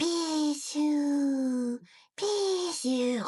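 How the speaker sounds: drowsy, dozing-off sleepy delivery. Voicing a game character who is asleep right now: sleepy Pichu voice. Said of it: "I'll be doing a sleeping voice for him as follows".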